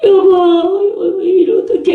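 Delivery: put-on crying and whining, laid on thick. Retelling a cartoon father's plea to his wife: imitating a husband crying and whining. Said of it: "남자가 막 울면서 엄살을 피우면서".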